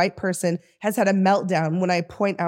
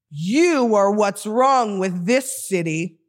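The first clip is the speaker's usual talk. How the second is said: put-on scolding yell, mild and held in. Speaker retells a man yelling at an unhoused man, retelling a loud yell. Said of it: "yells loudly".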